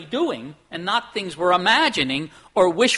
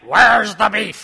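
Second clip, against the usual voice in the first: loud, raspy voice; 2 semitones higher, 7 dB louder than usual. Quoting a woman at the counter looking at a hamburger, in a raspy Clara Peller voice. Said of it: "with that raspy voice".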